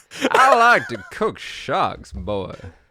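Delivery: slow, drawled, put-on Southern American accent. Going southern for a joke line: put-on Southern accent. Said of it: "I'm just gonna go southern".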